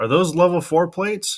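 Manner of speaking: put-on high hollering. Retelling a joke video where a man answers back: imitating someone yelling back. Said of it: "And the guy yells back".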